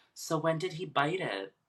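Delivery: gentle, solemn, sympathetic funeral voice. Speaker retelling a wife's remark in a story, imitating a nice funeral voice. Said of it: "most like funeral voice possible".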